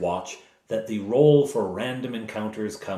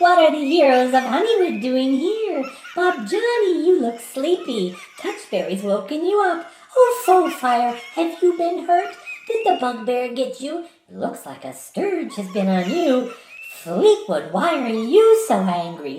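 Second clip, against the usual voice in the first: giggling fairy voice, higher and louder; 6 dB louder than usual. Voicing sprites who taunt the woken heroes: giggling sprite voice. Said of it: "a giggling sound comes down".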